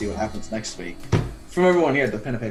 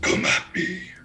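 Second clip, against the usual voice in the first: very demonic voice, much higher; 9 semitones higher than usual. Game master narrating a scene to a player: very demonic voice. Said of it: "you hear in a very demonic voice".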